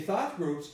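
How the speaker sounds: thought stressed, rest of groups lighter. Explaining stress in the phrase thought groups: stress on thought. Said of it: "I stress thought".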